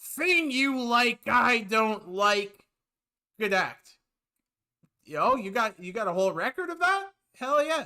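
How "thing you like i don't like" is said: slow, drawn-out, complaining delivery. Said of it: "The complaining man".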